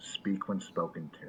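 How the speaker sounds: muttering under breath. Playing a character threatening another in a crowded room: speaking under his breath. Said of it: "just very under his breath".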